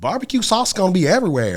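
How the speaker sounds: very high, sing-song, swooping, loud, animated. Quoting a funny line heard at a barbecue competition: Lynn impersonation. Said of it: "that's my Lynn impersonation".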